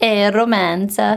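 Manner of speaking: put-on Italian accent. Saying the word for romance the way Italians say it: put-on Italian accent. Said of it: "What a great accent".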